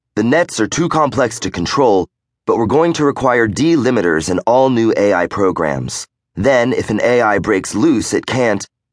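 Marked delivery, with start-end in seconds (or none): none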